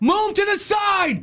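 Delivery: mock very high, drawn-out yell. Retelling how a man on shore yelled at him while he pulled his boat out, retelling a yell from shore. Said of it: "He's yelling from shore at me".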